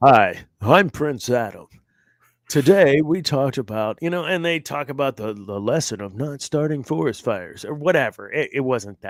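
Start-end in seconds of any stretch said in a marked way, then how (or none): 0.0-4.0 deliberate, slow, loud cartoon-host announcer voice. Retelling how each cartoon episode ended with a lesson: imitating Prince Adam. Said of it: "he'd be like".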